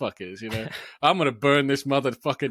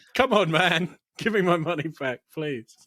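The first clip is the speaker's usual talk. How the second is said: acted desperate pleading, tough front crumbling; 3 semitones higher than usual. Quoting the same character's plea: imitating someone begging. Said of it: "but begging for".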